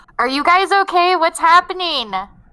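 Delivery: shrill, very high, full-volume shout. Player character calling to disoriented companions amid explosions, shouting really loudly. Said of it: "I'm shouting really loudly".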